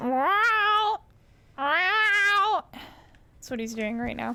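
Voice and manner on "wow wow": high, stretched, drawn-out shouted wow, pet voice. Showing viewers how the recording sounds, the speaker is imitating a loud pet. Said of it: "It sounds like this".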